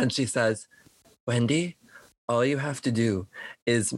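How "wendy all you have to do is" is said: whispered character voice, lower. Voicing the sexy aunt whispering to wendy: whispering as the sexy aunt. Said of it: "she whispers in Wendy's little ear".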